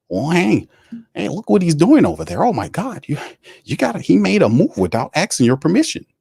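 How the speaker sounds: high-pitched, swooping, jealous-sounding voice. Act out Mickey complaining to Tom Benson about a move, in a mock-jealous Mickey voice. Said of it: "He channeled his inner jealous Mickey voice".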